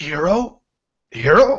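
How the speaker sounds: high, strangled, choked-out voice. Narrating, the speaker voices a man held by the throat, in a choking voice. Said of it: "in a choking way".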